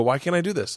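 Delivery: crying voice. Retelling tearing up on a bumpy flight: retelling own crying. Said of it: "I'm literally crying".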